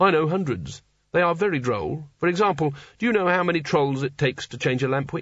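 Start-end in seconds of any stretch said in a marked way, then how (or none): none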